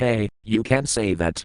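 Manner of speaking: ordinary delivery, nothing marked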